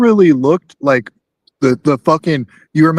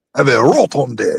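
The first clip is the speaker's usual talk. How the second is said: put-on villainous cartoon voice, lower pitch; 4 semitones lower than usual. Doing a cartoon villain bit: Wario voice. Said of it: "It's a me, a Wario".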